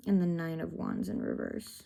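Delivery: ordinary talk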